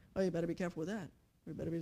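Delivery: very quiet, very low, anxious, panicky little murmur. Explaining how the devil pretends with little voices, voicing a mock-panicked little murmur. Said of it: "that little murmur".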